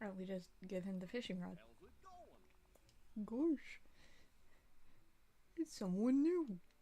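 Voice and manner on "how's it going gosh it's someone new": silly, goofy cartoon voice, high and very slow. Greeting someone new in a goofy voice. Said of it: "I don't know if I'm gonna be able to do a goofy voice".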